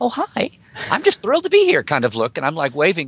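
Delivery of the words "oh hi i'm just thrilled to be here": very high, small, squeaky mousy voice. Speaker recalling meeting the newest Star Trek writer, imitating Ron Moore's mousy voice. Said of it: "like that little mousy".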